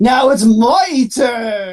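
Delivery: very slow, very drawn-out, maniacal villain voice. Imagining a villain emerging from a pod: Antoine laughing maniacally. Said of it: "he starts laughing maniacally".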